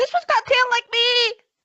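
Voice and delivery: excited, very high, fast fairy dragon squeal.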